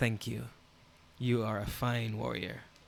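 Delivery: low, hushed voice. The princess smiles and thanks the warrior, for the warrior alone to hear: low, quiet voice. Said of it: "in a low voice".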